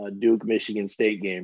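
ordinary talk

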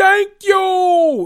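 shrill, loud shriek with "you" stretched out. Recapping a reality show argument, doing Siggy Flicker voice. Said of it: "let me stop doing Siggy Flicker voice".

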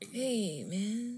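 laid-back, easygoing, cool and relaxed tone. Summing up Jack Nicholson's laid-back vibe: Jack Nicholson impression. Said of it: "his vibe is just like".

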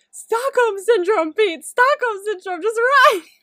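very high, very loud, shrill scream. Recalling first watching an episode, retelling screaming at the TV. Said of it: "I was screaming at the TV".

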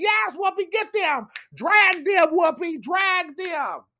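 shrill, high, loud, excited, drawn-out cheering scream. Recounting cheering on whoopi, retelling their own screaming. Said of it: "I was like screaming like".

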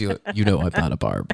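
voice dropped very low. Mimicking how the other person said a line, voice dropped very low. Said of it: "you said it like your voice dropped 10 octaves".

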